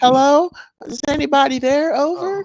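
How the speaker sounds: sweet, cute, very high pitch, slow. Imitating Wendy calling over the radio: imitating Wendy on the radio. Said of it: "She, she was so cute".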